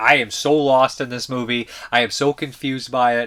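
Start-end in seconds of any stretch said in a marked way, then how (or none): none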